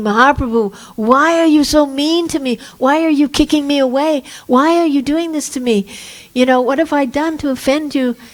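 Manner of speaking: high, tearful, crying, pleading voice. Telling a story of a man being sent to Vrindavan, imitating him crying and begging. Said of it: "he is crying and begging".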